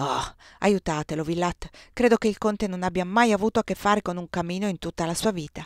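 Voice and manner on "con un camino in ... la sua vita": ordinary delivery, nothing marked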